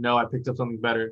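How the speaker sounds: normal talking voice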